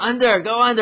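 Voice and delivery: put-on yell, as if distant. Speaker retells calling out to someone 100 yards away, retelling a yell. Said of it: "I'm like yelling".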